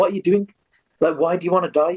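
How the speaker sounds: quick, light, called-out voice. Telling a story, the speaker voices an old warrior shouting down a well: retelling a shout. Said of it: "he shouts down to Sukha Singh".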